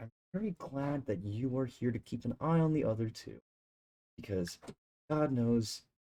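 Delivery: soft, confiding, leaning-in half-whisper. A game master voices a character who leans in to the group, half-whispering. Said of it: "leans in and kind of whispers like".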